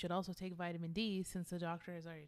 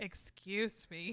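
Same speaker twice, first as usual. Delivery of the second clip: put-on annoyed voice. Retelling a sister's reaction to the joking: imitating Cindy getting mad. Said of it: "Cindy's getting mad".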